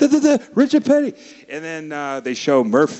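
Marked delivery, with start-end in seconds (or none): 0.0-1.1 put-on, all worked-up, very high and loud cry. Retelling an old commercial, quoting the worker Nick: imitating excited Nick. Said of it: "Nick gets all excited".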